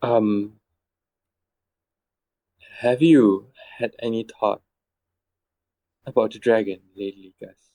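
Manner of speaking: hushed whispering voice. Narrator voicing an unseen voice in a praying character's ear at night, whisper. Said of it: "a voice um, whispers in your ear".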